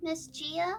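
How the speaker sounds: hushed, barely-there voice. Game master voices a character approaching a doorway to call gia, very quiet. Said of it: "just very quietly go".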